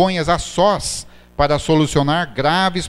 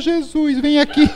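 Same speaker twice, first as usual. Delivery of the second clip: thinned-out, very high, scared voice; 11 semitones higher than usual. Showing how a frightened person calls out to Jesus, in a thin, high scared voice. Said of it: "Afina a voz".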